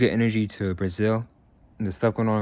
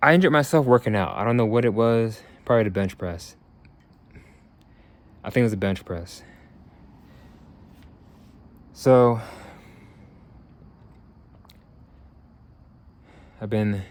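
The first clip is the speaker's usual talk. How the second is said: short of breath, struggling to talk. Speaker with ribs out of place explains the workout injury: out of breath. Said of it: "Catch my breath".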